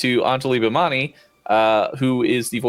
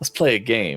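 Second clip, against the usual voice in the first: put-on Cajun accent, lower; 3 semitones lower than usual. Quoting a favorite cartoon line: Gambit voice. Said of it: "from the X-Men cartoon where he's like".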